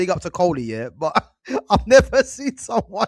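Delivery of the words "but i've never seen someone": with laughter. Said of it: "You know I'm laughing".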